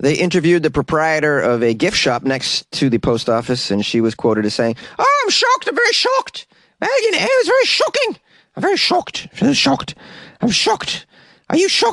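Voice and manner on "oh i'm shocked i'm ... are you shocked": fake Irish accent, pitched very high. Imitating a quoted gift shop owner: put-on Irish accent. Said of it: "This isn't even an Irish accent".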